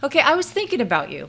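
sincere, unassuming, authentic, humble voice. Showing how the phrase should be said, the speaker uses a genuine, humble, authentic voice. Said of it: "in a genuine and a humble and authentic voice".

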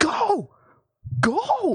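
put-on, very high, furious old lady shriek. Recounting a driver behind in the drive-thru telling them to go, imitating an angry yell. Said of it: "getting super mad at me, like, telling me to go".

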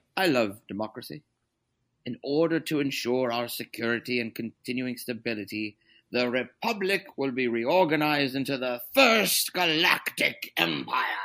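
put-on emperor voice with British accent. Asked by the other speaker to do it, trying a British Palpatine voice. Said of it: "I'll try the British regular Palpatine".

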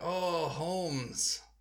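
weird, put-on Mexican accent voice. Retelling a movie role to friends: Shia LaBeouf playing a Mexican role. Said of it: "But he played a Mexican role. He's like".

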